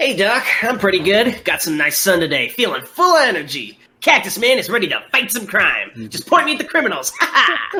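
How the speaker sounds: animated, children's cartoon superhero voice. Role-playing a hero answering the doctor's greeting, in a Cactus Man cartoon hero voice. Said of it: "I'm doing my fucking Saturday morning cartoon hero voice".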